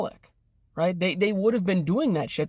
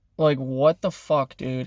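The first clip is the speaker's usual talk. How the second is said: irritated and angry, lower pitch; 5 semitones lower than usual. Venting to the camera about arguing with parents: angry and annoyed. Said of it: "I'm so angry and annoyed right now".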